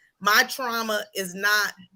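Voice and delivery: ordinary talk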